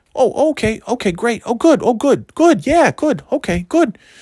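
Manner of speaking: eager, high-pitched voice. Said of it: "and then there was Tom".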